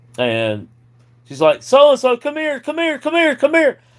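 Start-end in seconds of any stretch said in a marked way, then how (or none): 1.7-3.8 very high, shrill, urgent screaming yell. Retelling how the wife called the daughter in: imitating someone screaming. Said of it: "screaming at the top of her lungs".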